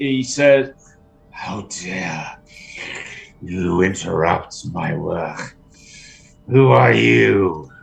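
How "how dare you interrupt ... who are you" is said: very low, slow, horrible hissing slurp. Game master voices a creature heard in a character's mind: horrible hissing, slurping voice. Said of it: "horrible hissing, sort of slurping voice".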